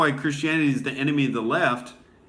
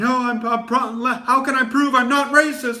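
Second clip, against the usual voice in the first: mock defensive stumbling stammer, raised and pitched way up; 11 semitones higher, 5 dB louder than usual. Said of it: "they'll just get real defensive and be like".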